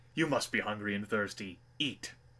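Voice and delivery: commanding, forceful, authoritative voice. Narrator voicing an enemy pilot offering food to the Commander, commanding voice. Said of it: "he says with all the force of a command".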